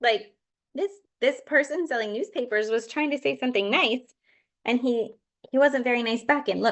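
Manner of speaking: plain reading voice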